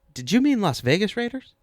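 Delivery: high, smarmy tone. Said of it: "Google got all smarmy with me".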